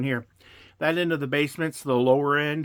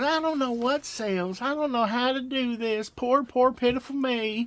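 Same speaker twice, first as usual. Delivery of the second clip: very high, sneering, mocking put-on woman's voice; 9 semitones higher than usual. Retelling what a woman used to say about reselling: mocking imitation of a woman. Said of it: "when I start talking like this".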